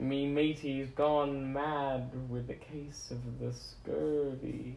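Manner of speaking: cartoon pirate voice. On Talk Like a Pirate Day, answering a complaint that nobody talks like a pirate, pirate voice. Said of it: "No one fucking talks like a pirate".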